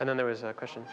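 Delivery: ordinary delivery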